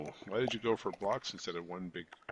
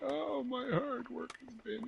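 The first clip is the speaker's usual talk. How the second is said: put-on very high baby-like crying; 3 dB quieter than usual. Speaker acts out the host breaking down, mock crying like a baby. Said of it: "start crying like a little baby".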